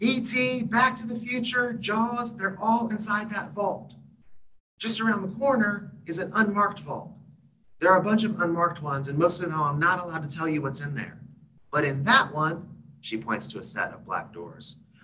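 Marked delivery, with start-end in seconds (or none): 0.0-12.7 put-on tour-guide voice, very high, yelling. Retelling what a guide said on a windy cave golf cart: imitating Debbie yelling. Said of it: "Debbie's always gonna be yelling when I do Debbie's voice".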